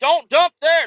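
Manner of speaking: very high, shrill screaming. Retelling dump workers yelling at a truck driver: imitating someone screaming. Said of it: "fucking screaming at you".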